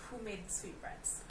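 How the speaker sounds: ordinary talk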